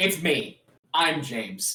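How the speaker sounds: very slow, deliberate, drawn-out altered voice. Showing how the character James sounds now: James's new voice. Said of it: "he sounds like this now".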